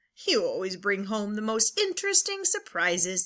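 ordinary delivery

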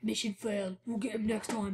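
game announcer voice. Two speakers riffing on a video game's defeat line, Call of Duty announcer voice. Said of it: "I sound exactly like that guy from Call of Duty".

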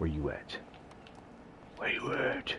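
hushed, whispered superhero voice. Playing a shooter game with friends, the speaker calls out in his Batman voice. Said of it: "I'm doing my Batman voice".

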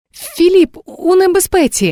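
very high, spent, exhausted, breathless gasp. A soaked girl at the door, clutching the doorframe after running, breathed out, exhausted. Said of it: "видихнула дівчина, судомно хапаючись за одвірок".

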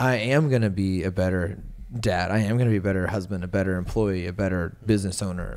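ordinary talk

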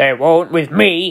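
snorting, with an audible snort. Gordon, shunting trucks about the yard, answers James: snorting. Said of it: "snorted Gordon".

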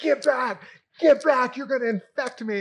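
shrill, very high, very loud, freaked-out barking shout. Retelling a man in line who turned around on the man behind, imitating a freaked-out man. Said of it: "And he's freaked out".

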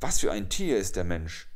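sharp, loud, fast snapping tone. Narrator reading the jackal's question to the mouse-deer: snapping at him. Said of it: "und er fuhr ihn an".

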